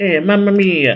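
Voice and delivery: put-on high-pitched, goofy Italian accent. Retelling a show's plot, the speaker voices the punks in a Waluigi voice. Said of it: "I don't know I'm doing an accent".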